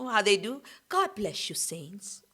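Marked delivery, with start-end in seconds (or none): 0.9-2.2 whispered, gentle, graceful, breathy, sweet and reverent tone. Imitating the congregation's expectations: mock soft graceful church voice. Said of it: "You know that type of talk".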